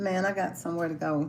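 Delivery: ordinary talk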